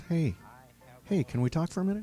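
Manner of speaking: gentle, soft-spoken voice. Showing how to approach a guy with a soft voice. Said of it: "approach him with a soft voice".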